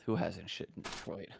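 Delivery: muttering under breath. Voicing a character who closes a drawer, then mutters under his breath. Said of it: "under his breath".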